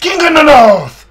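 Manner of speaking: high, loud, yelled mock English accent.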